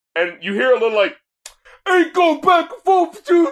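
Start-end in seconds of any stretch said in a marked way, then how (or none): 1.8-3.5 very high-pitched, defiant, belligerent tone. Imitating a recorded line to another speaker: imitating a belligerent delivery. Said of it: "he sounds more belligerent about it".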